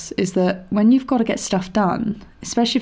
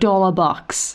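really bad put-on Australian accent. Chatting about a kids' BBC show, in a really bad Australian accent. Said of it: "That was a really bad Australian accent".

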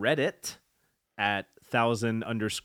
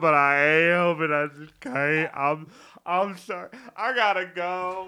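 high, tearful voice, talking through crying; 7 semitones higher, 4 dB louder than usual. A character apologizes and leaves, crying while talking. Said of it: "I promised myself I wouldn't cry".

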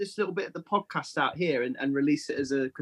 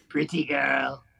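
put-on robotic alien voice. Voicing a Voci saying a line: Dalek-like voice. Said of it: "Why did yours sound more like a Dalek?".

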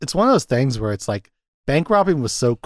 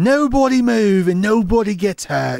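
fake British accent, very high, slow, drawn out; 10 semitones higher than usual. Retelling a movie robbery scene: imitating Patrick Swayze's British accent. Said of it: "doing, like, a British accent for a second".

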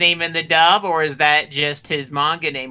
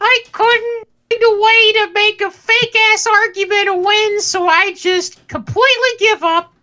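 put-on cartoon child voice, higher and louder; 5 dB louder than usual. Complaining about giving up a fake argument: put-on cartoon kid voice. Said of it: "Is this his new voice?".

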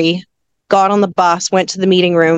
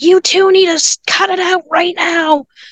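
very high-pitched, shrill shout; 11 semitones higher than usual. Retelling shouting at the two parents to stop: imitating a shout. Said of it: "we just shouted at the two of them".

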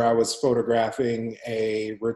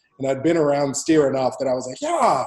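ordinary delivery

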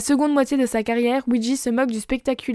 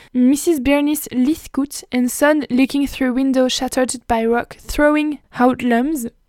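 put-on English accent pronunciation. Reading an English photo title aloud: English accent. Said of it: "mon accent anglais".

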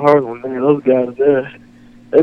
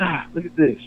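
hushed half-whisper; 3 semitones higher, 7 dB quieter than usual. Retelling a close bobcat encounter while calling a companion: retelling a whisper. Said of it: "I'm kinda whispering at him like".

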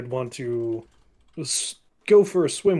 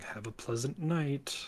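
very quiet, soft half-whisper; 10 dB quieter than usual. Playing a character who says goodnight to nothing: half-whispering. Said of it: "whispers to nothing".

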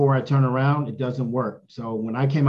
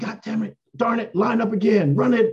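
mock, shrill, very high-pitched scream; 9 semitones higher than usual. Retelling a coach's angry outburst at practice: imitating a coach screaming. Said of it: "Parcells was screaming at him".

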